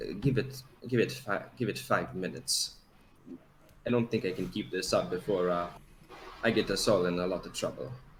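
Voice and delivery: soft, hushed half-whispered line. Speaking in character to the party during a tense moment: half-whispering in character. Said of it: "I'm just going to, uh, whisper".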